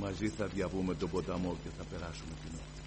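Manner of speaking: softened, low, tender fatherly voice.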